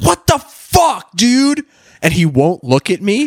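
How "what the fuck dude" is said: very high-pitched, shrill screaming. Retelling confronting a guy behind them at a construction site, retelling a scream. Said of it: "and I'm screaming".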